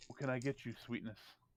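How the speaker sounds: low, very smooth, silky, hushed voice. Narrator voicing a man approaching a player in common tongue, smooth silky voice. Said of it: "Very, very smooth, silky voice".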